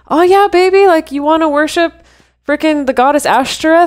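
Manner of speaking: high, loving, warm, all-embracing guy voice. Acting out one reading of Solomon: Solomon as a loving, accepting guy. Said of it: "super egalitarian, loving, multicultural guy who's like".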